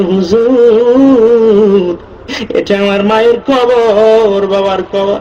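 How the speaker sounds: weeping, grieving, pleading voice.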